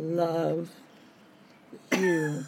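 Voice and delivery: put-on slow drawn-out speech. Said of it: "All slow like that".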